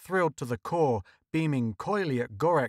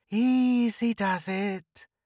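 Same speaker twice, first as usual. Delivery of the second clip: put-on high-pitched, whistling Martian accent; 7 semitones higher than usual. Narrator reads a Martian pressing a gun into a man's side, whistling Martian accent. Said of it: "the Martian admonished in his whistling accent".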